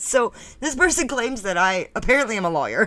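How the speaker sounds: laughing, with giggles breaking into the words. Reading out a claim about themselves, laughing while talking. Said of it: "I can't stop laughing".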